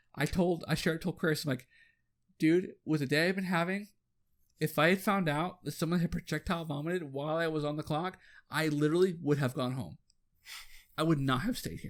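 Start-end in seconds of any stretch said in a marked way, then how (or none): none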